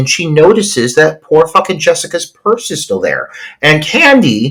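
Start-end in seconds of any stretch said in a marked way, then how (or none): none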